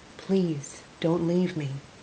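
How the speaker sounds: whispering desperately. Into the wounded narrator's ear as a doctor works on her, desperate whisper. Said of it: "Steve whispered desperately into my ear".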